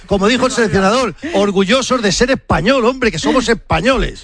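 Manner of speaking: high, emotional, overcome cheer. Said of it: "te hablo con el corazón".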